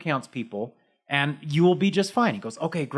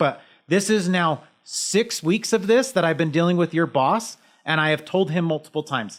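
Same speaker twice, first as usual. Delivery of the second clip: usual speaking voice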